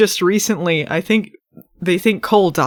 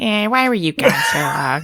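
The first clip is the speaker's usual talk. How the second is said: put-on, lower-pitched character voice. Contrasting how Piper would ask the question: Piper impression, octave lower. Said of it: "She'd say it like an octave lower".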